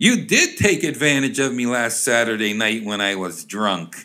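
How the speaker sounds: ordinary talk, nothing marked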